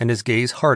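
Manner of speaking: ordinary delivery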